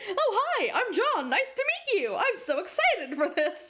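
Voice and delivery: high, sweet, guileless, innocent, friendly voice. Retelling how John introduced himself to Carcat, imitating John's innocent tone. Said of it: "He's just like so innocently like".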